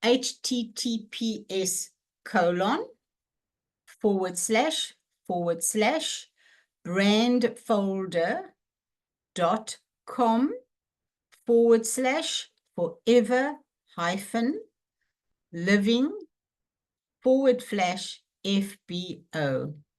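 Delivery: very slow, piece-by-piece, spelled-out delivery. Reading out a website address for viewers to copy down, very slowly. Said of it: "I'm going to say it very slowly".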